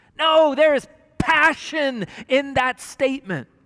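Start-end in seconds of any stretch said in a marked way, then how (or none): none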